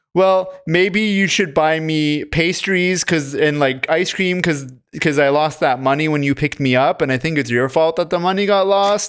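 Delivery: normal talking voice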